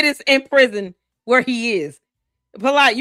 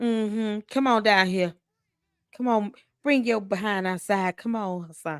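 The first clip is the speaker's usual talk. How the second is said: soft and sweet, much quieter, lower voice; 5 semitones lower, 8 dB quieter than usual. Calling someone to come down and outside, in a soft, sweet voice. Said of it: "Why you sound so soft?".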